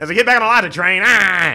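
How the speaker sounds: very high, shrill, very loud mocking caricature. Pretending to be the other speaker on their microphone: imitating the other speaker. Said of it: "act like I'm you".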